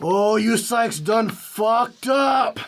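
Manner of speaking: big booming, echoing voice. Narrating a voice echoing down the hallway at the listeners: loud booming voice. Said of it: "you hear a very loud booming voice".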